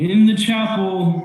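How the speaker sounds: booming call, pitched very high. Game master voices an unseen voice calling to the players among zombies: loud voice. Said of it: "you just hear a loud voice go".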